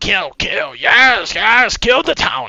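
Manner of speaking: very high, very loud, swooping goblin snickering. Voicing little goblins excited beside an ogre: snickering goblin voice. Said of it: "they're just standing there snickering".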